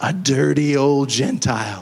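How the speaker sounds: low, creepy sneering voice. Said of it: "use that creepy voice".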